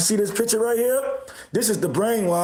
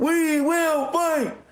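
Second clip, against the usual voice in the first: put-on high, rallying street-protest-style yell; 8 semitones higher than usual. Mocking protesters camped across from the ICE building: imitating protesters screaming.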